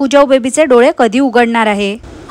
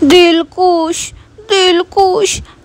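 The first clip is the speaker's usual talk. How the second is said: mock little-girl voice, higher; 6 semitones higher than usual. Retelling how a wife asked for a sweet: imitating childish talk. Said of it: "बालीसारखी बोलत होती".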